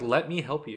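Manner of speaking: normal talking voice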